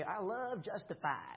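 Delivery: put-on southern accent. Quoting what a church teacher used to say, in Gordon Ferguson's southern accent. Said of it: "he talked like in a southern accent".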